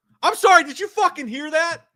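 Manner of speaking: loud, shrieking, very high-pitched yell. Reacting to a trailer line just heard, yelling. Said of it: "Sorry for yelling".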